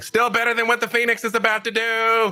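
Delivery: booming, amplified, high-pitched voice. Speaking in character with a magically amplified voice across the ship: booming voice. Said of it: "so my voice booms through the Storm Herald".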